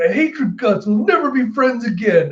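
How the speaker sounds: mock sobbing in a high, weepy voice. Retelling a scene where Nami is crying: mock crying as Nami. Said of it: "Nami just crying like".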